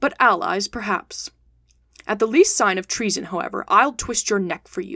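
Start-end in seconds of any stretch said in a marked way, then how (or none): none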